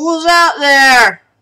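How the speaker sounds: mumbly voice, half-muffled as through a wall. Voicing someone calling from behind a wall, half muffled and somewhat mumbly. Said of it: "kind of half muffled and somewhat mumbly".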